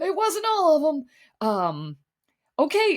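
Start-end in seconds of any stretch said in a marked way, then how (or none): 0.0-1.5 put-on very high, elderly old man voice. Speaker repeating a show contestant's reply after asking about the impression, old man Mel voice. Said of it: "How's that for an impression?".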